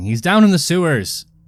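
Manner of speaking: high, carrying in-character yell. Playing a character calling to friends behind: yelling in character. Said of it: "they'll find me yelling".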